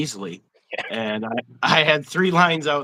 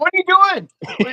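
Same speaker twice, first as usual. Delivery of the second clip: mock shrill, very high, loud, carrying yell; 5 dB louder than usual. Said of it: "and I'm yelling at him".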